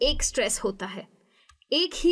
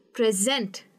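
present with stress on second syllable, pre-SENT; 3 semitones lower than usual. Teaching English word stress for a verb, stress on sent in present. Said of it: "मैं आखिरी syllable पे stress करूंगी".

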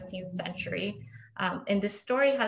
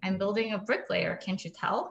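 plain

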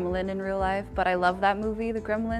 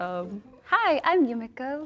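put-on character voice, much slower; 5 semitones higher than usual. Asked for an impression of their character, a guest introduces themself: Yumiko impression. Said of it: "are you able to do like the best impression of your character".

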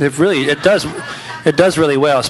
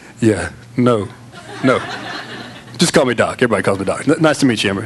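much lower, pitched-down voice; 5 semitones lower than usual. Retelling introducing oneself to a new acquaintance, lowered voice. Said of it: "lower my voice a little bit".

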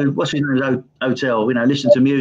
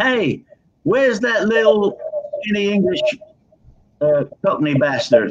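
big, high, bellowing shout; 6 semitones higher than usual. Retelling a big voice calling out during a sound check: imitating a bellowing shout. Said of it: "this big voice bellowed out".

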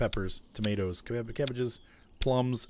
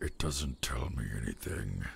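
thoroughly displeased, very unhappy character voice; 11 semitones lower, 6 dB quieter than usual. Reading farm building labels aloud in a game, as Arthur: very unhappy Arthur voice. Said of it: "That's my Arthur's very unhappy voice right now".

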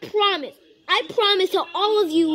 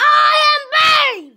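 bold, very high, loud shout; 11 semitones higher, 8 dB louder than usual. Repeating a line in a skit after being asked: saying it louder. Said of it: "A little louder".

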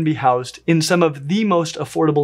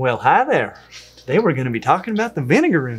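put-on Southern US accent. Asked by the other speaker to do an accent, repeating the intro in a southern accent. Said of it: "Now do a southern accent".

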